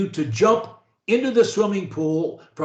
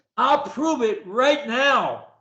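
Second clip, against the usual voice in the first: high, lively, energetic, passionate, full of conviction; 5 semitones higher than usual. Showing a learner how to say a phrase: energetic, passionate delivery. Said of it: "with energy, with passion".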